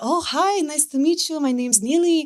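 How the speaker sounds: deliberately bad Israeli accent. Retelling how his mom introduced herself, horrible Israeli accent as Neely. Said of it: "This is my horrible Israeli accent".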